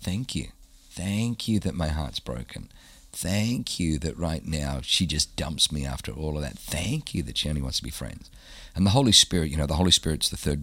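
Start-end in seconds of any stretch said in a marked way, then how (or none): 0.0-8.3 play-acted, biting, snarky sarcasm with snide edge. Retelling what they said to God in the car after being dumped, retelling snarky sarcastic prayer. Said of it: "I'm being snarky and sarcastic".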